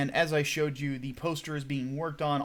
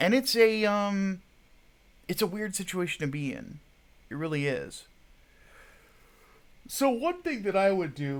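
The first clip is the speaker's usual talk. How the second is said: sleepy yawning, much slower; 5 semitones higher than usual. Still waking up, giving advice to young men, yawning while talking. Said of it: "I'm sorry for the constant yawning".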